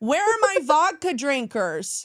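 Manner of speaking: put-on calling out, high-pitched and drawn out. Retelling how the flight attendant called out over the plane: imitating a loud call. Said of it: "And loudly he goes".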